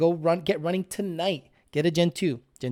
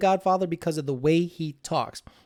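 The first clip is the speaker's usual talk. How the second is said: ordinary delivery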